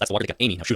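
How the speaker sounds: usual speaking voice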